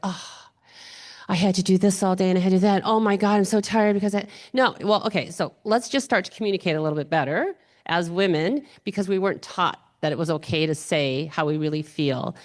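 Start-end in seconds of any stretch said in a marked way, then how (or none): 0.0-4.3 mock passive-aggressive, martyr-like complaining tone. Acting out how women complain about their day: imitating passive-aggressive complaining. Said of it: "no more passive aggressive comments".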